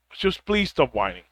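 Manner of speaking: gentle, hushed, very soft and very low voice. Speaker addresses listeners, asking really nicely; very soft tone. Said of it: "in a very soft tone".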